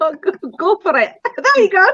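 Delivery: attempted Scottish accent. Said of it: "Can you do a Scottish accent?".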